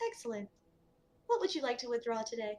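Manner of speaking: cool, crisp voice. Voicing an automated bank voice asking about a deposit: cool, crisp voice. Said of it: "That cool, crisp voice comes on".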